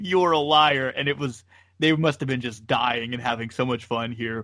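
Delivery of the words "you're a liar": mock screamed outburst. Retelling how the commentator answers every remark: imitating Gorilla screaming. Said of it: "he just screams at him".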